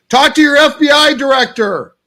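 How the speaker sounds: very high, slow yell. Retelling yelling at the screen during a speech: imitating own yelling at screen. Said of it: "I'm yelling at the screen going".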